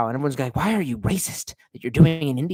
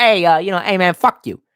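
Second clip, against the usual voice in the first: fake New York accent, higher; 4 semitones higher than usual. Joking about answering everyone the way a New Yorker would, mock New York accent. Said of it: "start responding like a New Yorker".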